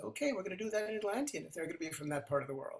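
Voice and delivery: ordinary talk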